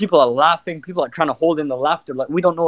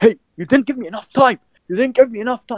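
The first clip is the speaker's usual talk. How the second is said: high, raised male shouting; 7 semitones higher than usual. Retelling how a man in a shop queue turned on the dad: imitating a man shouting. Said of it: "starts shouting".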